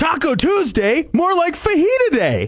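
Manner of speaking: bubbly, excited, high-pitched, swooping voice. Saying the same joke line in different moods, now saying it excited. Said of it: "I'm going to say it excited now".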